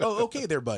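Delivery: put-on Canadian accent. Imitating Canadian gamers who sound like Letterkenny hockey players: imitating Canadian accent. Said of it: "they sound just like that".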